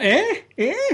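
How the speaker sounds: very high mock deaf old man voice. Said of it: "that was a legitimate".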